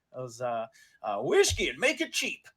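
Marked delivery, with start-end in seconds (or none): 1.2-2.4 put-on grizzled, high-pitched old miner character voice. Voicing an old miner with a bushy beard ordering at the bar: old miner character voice. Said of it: "he walks up to the bar and he goes".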